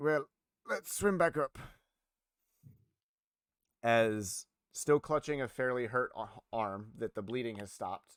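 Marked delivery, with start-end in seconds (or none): 0.0-1.6 put-on Scottish-Irish accent. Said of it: "the Scottish and, like, uh, uh, Irish accent".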